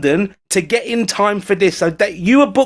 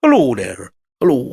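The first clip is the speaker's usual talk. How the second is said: put-on lovely presenter-style Irish accent; 8 semitones lower than usual. Imitating the presenter Terry Wogan's greeting: Terry Wogan impression. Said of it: "Lovely Irish accent".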